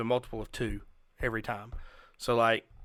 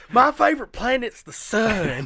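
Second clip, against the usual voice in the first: booming, shrill, swooping, slow, "sun" stretched out; 11 semitones higher, 10 dB louder than usual. Quoting a Saturday Night Live skit: Harry Caray impression. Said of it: "Saturday Night Live skit with Harry Carey".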